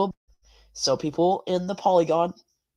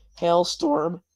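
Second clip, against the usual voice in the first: voice cracking on one word mid-sentence. Speaker tracking a large hailstorm's path for an audience, voice cracking. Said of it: "Sorry for that voice crack".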